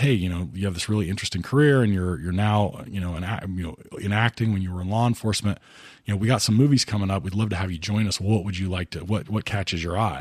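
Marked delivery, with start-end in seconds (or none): none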